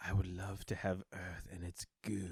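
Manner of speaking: very soft, creepy, gross half-whisper. Mocking a creepy movie villain's speech: imitating Eddie Redmayne's gross half-whisper. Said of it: "he whispers in this, like, gross".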